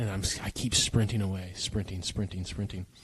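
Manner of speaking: usual speaking voice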